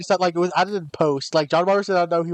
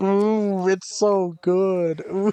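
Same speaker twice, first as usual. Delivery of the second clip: very slow, drawn-out moan. Retelling a smoking ad, imitating John Waters moaning. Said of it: "he's just, like, moaning".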